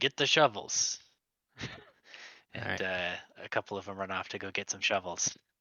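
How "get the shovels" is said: high-pitched, loud shouting. A man calls over to his tribesmen, shouting an order. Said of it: "And he shouts over to his tribesmen".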